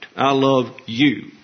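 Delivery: heavy stress on the word you. One person says i love you to another, stress on the word you. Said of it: "with emphasis on the object".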